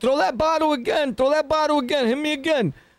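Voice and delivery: high-pitched, screamed, shouted delivery. Retelling a video acting as Hassan: imitating Hassan screaming. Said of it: "Where I'm screaming out like".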